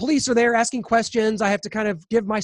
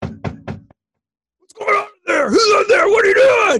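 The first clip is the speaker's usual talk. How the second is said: very high, loud, gravelly, menacing rasp; 11 semitones higher, 5 dB louder than usual. Retelling the ex shouting from outside her house, imitating a raspy threatening voice. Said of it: "like raspy, gravelly, like very threatening voice".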